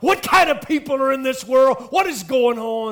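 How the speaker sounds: put-on outraged, indignant outburst, high and loud. Retelling a woman's outraged words about a stranger eating her cookies: imitating a livid woman. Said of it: "And she is just livid".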